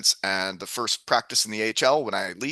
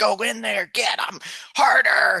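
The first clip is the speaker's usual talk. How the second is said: very high, drawn-out scream, acted out; 9 semitones higher than usual. Retelling how a dad at minor hockey yelled at his kid: imitating a dad screaming. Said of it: "a dad screaming".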